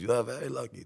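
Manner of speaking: soft, gentle put-on Greek accent. Retelling what the judge said after the case was beaten: imitating a Greek accent. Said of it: "He had a Greek accent".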